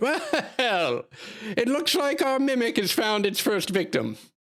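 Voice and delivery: high, calling-out carnival barker showman's yell. Narrating a game scene, voicing a carnival barker before a laughing crowd, carnival barker yelling out. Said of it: "the carnival barker yells out".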